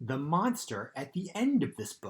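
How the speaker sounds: ordinary delivery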